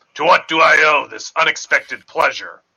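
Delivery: booming voice. Game master voicing a character addressing the players: booming voice. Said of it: "now in a booming voice he says".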